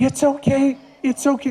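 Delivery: anxious, freaked-out, high, slow, soothing tone. Demonstrating the wrong way to soothe a scared rescue dog, freaked-out voice. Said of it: "I sound like I'm freaked out".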